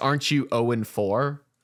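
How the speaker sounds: acted icy, cold, cutting tone. Retelling a teammate's cold reply to a boast: imitating a cold retort. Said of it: "coldly says".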